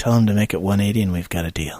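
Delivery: quiet, half-whispered voice. Leaning over to Azzo in character to propose a deal: half-whispering. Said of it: "I lean over to Azzo and I whisper".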